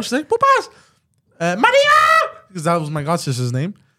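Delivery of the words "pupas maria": very high, swooping, frantic yell, one word stretched out. Retelling how his mother woke up and called out, imitating her freaking out. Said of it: "Freaking out".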